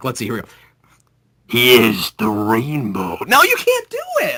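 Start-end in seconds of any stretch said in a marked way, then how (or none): 1.5-3.2 very low, deep, dramatic cinematic trailer announcer voice. Trying to make the rainbow sound cinematic, in a dramatic announcer voice. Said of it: "in an announcer voice I can make the rainbow sound like dramatic and cinematic".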